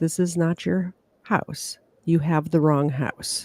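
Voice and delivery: composed, very calm, low voice. Retelling events, the speaker quotes a man inside his home speaking to James: retelling a very calm, low voice. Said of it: "very calm, low voice".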